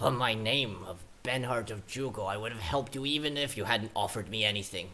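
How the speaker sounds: growling voice on every word throughout. Narrator voicing Benhart replying to the party's offer of services, growling as Benhart. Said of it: "The man growls".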